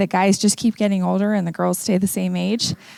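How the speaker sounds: normal talking voice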